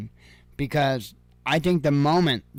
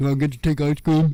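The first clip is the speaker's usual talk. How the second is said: bad put-on voice sounding dim-witted and dopey. Joking about politicians going swimming, doing a terrible Joe Biden impression. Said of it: "I do terrible impressions".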